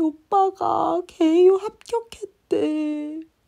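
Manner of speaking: high, slow, tearful voice, crying. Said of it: "막 울면서".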